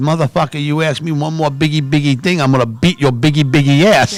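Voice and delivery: imitated furious, angry outburst. Retelling a friend snapping at the drive-in worker: imitating a furious outburst. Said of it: "I could see him foaming".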